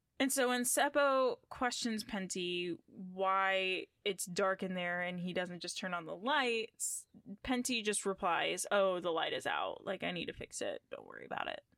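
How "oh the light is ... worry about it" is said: mock breezy, offhand, nonchalant sing-song tone. Retelling a father's reply about the dark kitchen: imitating Penty's nonchalant reply. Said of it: "Just very nonchalant".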